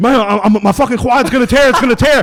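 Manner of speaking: mock pained yell. Retelling what he told his mentor during painful training, retelling a scream. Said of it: "I'm screaming".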